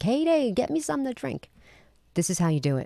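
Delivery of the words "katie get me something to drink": put-on pitched-up hollering yell with a Jersey accent. Retelling how their father yelled across the house for their mother, imitating a Jersey-accent yell. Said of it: "like in that Jersey accent".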